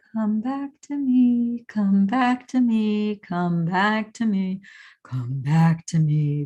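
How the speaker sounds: imitated whimpering voice. Retelling a voice heard calling out: imitating a faint whimpering voice. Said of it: "faint, faint whimpering of a voice".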